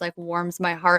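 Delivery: normal talking voice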